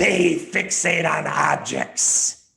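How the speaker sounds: spooky, creaky, loud, rough horror voice. Reading the 'they' statements while Tim reads the 'we' statements, in a scary voice. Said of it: "read the they statements in a scary type of voice".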